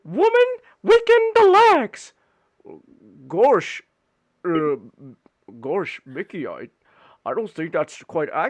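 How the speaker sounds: loud, swooping, bouncy cartoon-style dog voice. Speaker answers a request for Disney character voices, in a Goofy voice. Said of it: "Remember, Goofy?".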